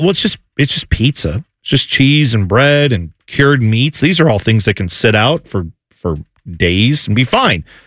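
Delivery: ordinary talk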